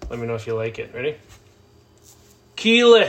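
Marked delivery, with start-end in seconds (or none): 2.5-3.1 very high, very loud, belted character yell. Doing an impression of someone on Ted Lasso: Jamie Tartt voice. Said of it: "I do an impression of someone on Ted Lasso".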